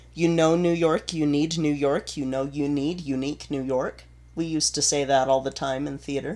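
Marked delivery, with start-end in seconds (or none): none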